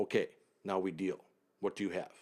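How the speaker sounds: mock dead calm, composed, level voice. Speaker retells a man who stopped ranting and sat down, imitating a very calm voice. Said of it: "he says in a very calm voice".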